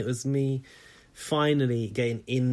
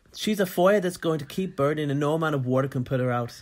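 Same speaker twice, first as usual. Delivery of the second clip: rough, put-on attempt at an Irish accent; 3 semitones higher than usual. Reading a housemate's quote aloud on request: Irish accent imitating Kian. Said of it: "can you do the Irish accent?".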